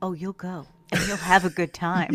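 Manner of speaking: put-on creepy, unsettling, insistent, pushy tone. Retelling how a movie character asks a girl to the dance: imitating a creepy invitation. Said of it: "He asks her creepily to go to the dance".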